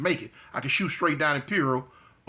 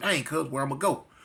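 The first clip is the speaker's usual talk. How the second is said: normal talking voice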